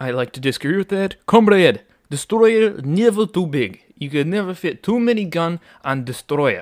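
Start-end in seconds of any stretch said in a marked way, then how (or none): 1.3-6.6 bad, over-the-top, exaggerated fake Russian accent. Answering a critique of the ship's size, in a bad exaggerated Russian accent. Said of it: "That was a bad Russian accent".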